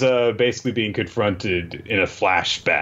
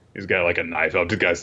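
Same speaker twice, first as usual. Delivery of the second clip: ordinary talk, nothing marked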